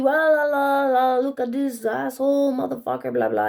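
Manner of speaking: griping, ranting stream of complaints. Recounting a man yelling insults at the president on TV, imitating his yelling. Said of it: "He was just yelling at the T V".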